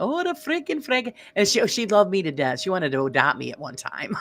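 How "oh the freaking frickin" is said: put-on heavy German accent. Imitating a friend's mother who avoided swearing: imitating heavy German accent. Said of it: "with, you know, a heavy German accent".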